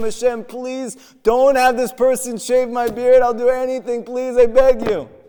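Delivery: desperate, tearful, sobbing voice. Storyteller retells a jailed man crying out to God: imitating a crying plea. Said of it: "he starts crying to Hashem".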